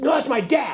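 firm defiant high voice. Retelling an eight-year-old's reply to a girl at putt-putt: imitating a defiant reply. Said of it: "very defiantly".

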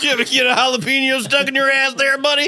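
loud, very high put-on Southern drawl.

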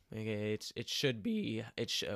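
big crack breaking through the voice mid-word. Previewing a football game against the Eagles when the voice cracks: voice cracking. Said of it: "whoa, voice crack".

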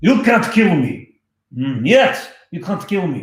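high, put-on Russian accent. Asked by a viewer to say something in a Russian voice, obliging in a Russian accent. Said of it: "say something in Russian voice".

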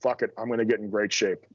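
ordinary talk

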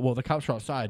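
ordinary delivery

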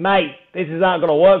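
imitated Australian accent. Retelling what a man in the startup community told him, imitating an Australian accent. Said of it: "He's Australian".

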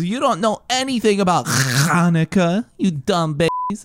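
very high, swooping cartoon voice. Quoting the Rugrats Hanukkah special: Angelica voice. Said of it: "that's what Angelica says".

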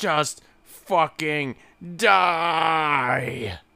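slow, drawn-out, furious yelling.

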